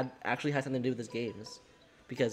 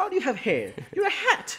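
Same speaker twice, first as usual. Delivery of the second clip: put-on British accent; 8 dB louder than usual. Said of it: "Is Mario British?".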